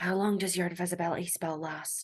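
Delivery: whispering softly. A character leans in and whispers a question into a companion's ear, whispering. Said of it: "whisper in her ear".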